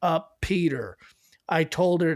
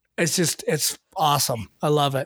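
normal talking voice

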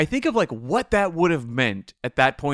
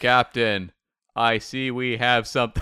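flat, slow, mechanical, machine-like robotic delivery. Imitating the animated series cast in a robotic voice. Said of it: "it's very robotic".

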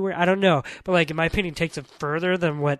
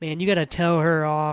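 normal talking voice

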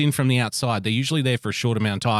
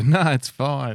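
put-on forced polite voice through gritted teeth, higher; 3 semitones higher than usual. Retelling someone's reply when a dog greets him: imitating Greeno through gritted teeth. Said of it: "He'd smile with, like, gritted teeth and go".

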